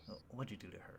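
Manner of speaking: hushed voice. Voicing a character who pulls a player close: whispering. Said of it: "he starts whispering to you".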